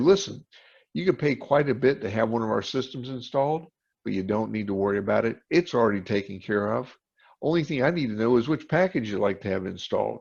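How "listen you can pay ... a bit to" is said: plain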